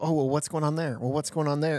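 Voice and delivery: ordinary talk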